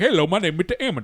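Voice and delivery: strange, odd, impeded speech-impediment voice. Recalling a substitute teacher from school, Mister Ammons impression. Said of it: "he had a weird like speech impediment where he would talk like this".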